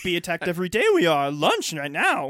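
loud put-on voice with wide swooping pitch. Joining a joke about the Jedi council under attack: Yoda voice.

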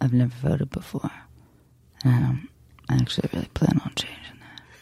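whispered, breathy, sultry put-on seductive voice. Imagining how a man might say a line, in sexiest male voice. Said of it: "I'm going to try to do it in my sexiest voice, male voice".

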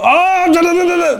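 very high, mock exasperated da-da sound.

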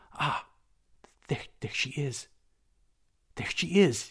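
high, stammering, faltering outburst. Matho suppresses a cry and speaks to Spendius: stammering out. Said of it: "he stammered out".

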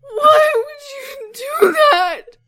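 put-on very high, very loud wailing cry like a child. Player voices a kid who ran up to the scene: ugly child crying. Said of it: "Ugly child crying".

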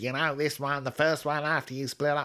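put-on American accent. Quoting what an American woman once said, imitated American accent. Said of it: "Sorry, she was American. ... I can't believe I did her voice".

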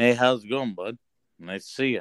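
ventriloquist-style speech without moving lips. Showing the host how to be a ventriloquist, in a ventriloquist voice. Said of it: "I'm going to show you how to be a ventriloquist".

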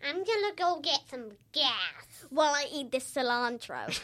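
put-on American accent, pitched low. Showing the others how american people talk, in a put-on american accent. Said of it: "I love your American accent".

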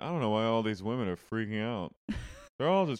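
calm, unbothered, musing tone. Retelling a moment from a show: imitating Kathy. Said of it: "she's just sitting there going".

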